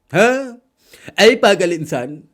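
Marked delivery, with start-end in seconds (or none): 1.2-2.1 put-on film-actor voice, very loud, high, ranting shout. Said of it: "उधर से नाना पाटेकर साहब शुरू हो गए".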